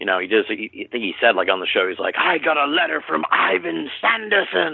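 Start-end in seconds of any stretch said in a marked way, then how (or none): 2.2-4.8 play-acted, high, excited and delighted. Retelling what a guest said on the show: imitating an excited voice. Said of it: "all excited and thrilled".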